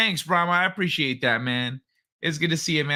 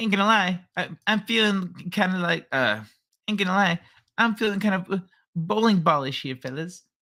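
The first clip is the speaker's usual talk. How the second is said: halting, not-great cartoon character voice with restarts; 3 semitones higher than usual. Reading a chat request aloud, then trying it: Butters voice. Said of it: "I don't have a great Butters impression".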